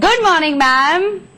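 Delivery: bright, perky, chirpy and lively. Showing someone how to say a morning greeting, chirpy and lively. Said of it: "थोड़ा चहके बोलिए, ... ऐसे बोलिए।".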